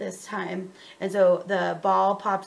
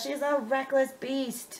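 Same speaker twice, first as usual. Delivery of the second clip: mock angry adult yelling, higher; 6 semitones higher, 4 dB quieter than usual. Retelling what the other parents yelled at the game: imitating adults yelling. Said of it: "Adults yelling at".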